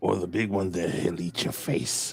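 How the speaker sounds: hushed, soft, private whisper. Playing a character who whispers a warning to someone: whispering. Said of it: "I whisper to him".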